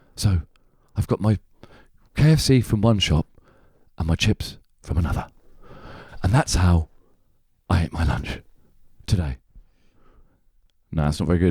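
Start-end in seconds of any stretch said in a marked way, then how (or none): 0.2-9.4 put-on documentary narrator voice, lower. Performing an impression on request, going deep about lunch: Adam Curtis impression. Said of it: "Can you do your impression of Adam Curtis going deep about his lunch?".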